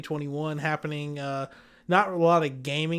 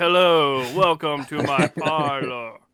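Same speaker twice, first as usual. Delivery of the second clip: mock ominous voice, louder; 6 dB louder than usual. Imitating another speaker's greeting after he turns his chair: imitating an ominous greeting. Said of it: "He sounds so, like, ominous".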